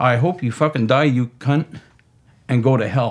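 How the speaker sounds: put-on enraged, hateful, angry voice. Retelling what a man with a knife said to him, retelling an angry threat. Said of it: "he got angry and he just looked at me".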